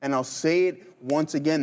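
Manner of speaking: plain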